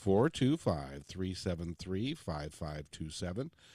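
slow, deliberate. Speaker giving listeners a call-in number, slow and deliberate. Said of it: "I'll say it slowly for you".

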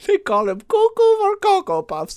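very high, swooping, sing-song cartoon voice. Quoting a movie trailer's narrator, accidentally in a Doofenshmirtz voice. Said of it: "Why do I sound like Doofenshmirtz?".

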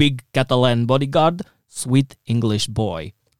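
loud, slow, put-on Russian accent. Retelling what a former bodyguard used to say: imitating a Russian accent. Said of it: "he had a really Russian accent when he spoke English".

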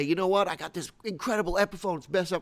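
ordinary talk

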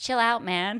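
put-on American accent. Recounting what they said to him back then, american accent. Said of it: "And so I said in an American accent".

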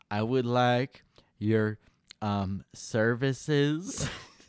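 slow, drawn-out, weird formal voice. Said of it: "walking into an Arby's and be like".

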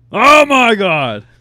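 very loud, very high, thrilled excited shout. Reacting to a surprise of new stickers: excited yell. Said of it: "Sorry, didn't mean to yell".

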